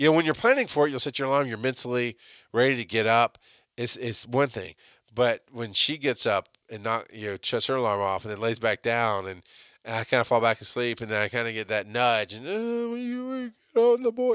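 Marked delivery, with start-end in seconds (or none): 12.5-14.4 drowsy voice, pitched very high. Retelling his wife's morning nudge to get the boys: imitating wife's sleepy voice. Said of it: "that sleepy voice is all I'm trying to really do".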